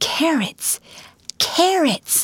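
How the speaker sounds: sharp, cutting, piercing whisper pitched high. Reading a boy's line as he holds up a girl's braid, in a piercing whisper. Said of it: "said in a piercing whisper".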